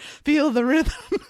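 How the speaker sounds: very loud, awkward, corny narration voice. Quoting a line from a movie's voiceover: imitating an awkward cheesy voiceover. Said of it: "in this really awkward, cheesy, like, voiceover".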